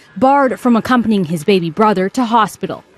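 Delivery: ordinary talk, nothing marked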